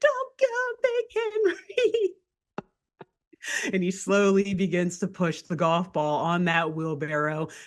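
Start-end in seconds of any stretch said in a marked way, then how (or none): 0.0-2.1 very high, shrill, drawn-out sobbing, pleading scream. Voicing a little miner girl begging Big Henry to stay: crying, screaming, begging. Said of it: "Crying, screaming, begging".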